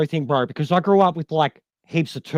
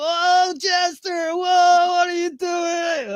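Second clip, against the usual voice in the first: mock very high, slow, spaced-out stoned drawl; 13 semitones higher than usual. Retelling how a happy viewer greeted jester: imitating a stoned person. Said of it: "I swear he was baked as shit".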